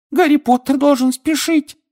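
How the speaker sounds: very high, squeaky elf voice. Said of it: "пискнул Добби".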